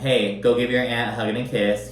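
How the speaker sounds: normal talking voice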